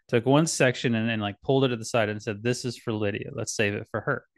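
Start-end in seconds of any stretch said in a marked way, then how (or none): none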